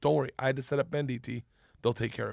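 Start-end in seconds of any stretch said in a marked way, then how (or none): none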